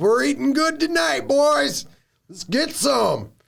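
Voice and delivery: squeaky-high, rough, rasping orc growl. Voicing orcs coming out of tents with weapons: orc voice. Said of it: "a lot of 'em start coming out".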